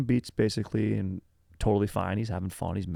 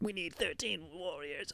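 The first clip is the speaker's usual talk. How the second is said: very high-pitched witchy lady voice; 9 semitones higher, 11 dB quieter than usual. Retelling a movie scene, imitating the witch lady's voice. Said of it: "Women that talk like this".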